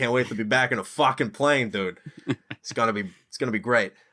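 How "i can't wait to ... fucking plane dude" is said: put-on, almost New York accent. Repeating the other speaker's quote back to him, in a New York accent. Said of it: "You sounded almost New York".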